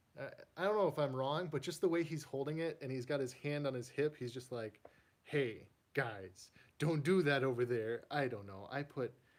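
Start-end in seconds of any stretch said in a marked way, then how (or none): 5.2-8.0 loud, slow, sassy little character voice. Showing a collection, voicing a figure that looks sassy: voicing a sassy action figure. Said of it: "I put voices to my characters sometimes".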